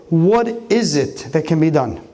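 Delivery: ordinary talk, nothing marked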